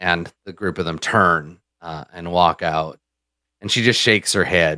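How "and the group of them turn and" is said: usual speaking voice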